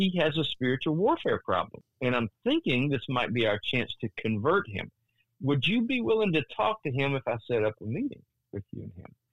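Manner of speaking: ordinary talk, nothing marked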